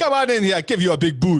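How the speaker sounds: very high, very loud, fake Jamaican accent. Teasing a co-host whose accent went Jamaican, echoing him: put-on Jamaican accent. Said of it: "You went Jamaican".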